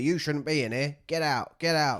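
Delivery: angry yelling, high and loud, over and over. A player retells a game character shouting at them to get out. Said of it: "He's just shouting at me".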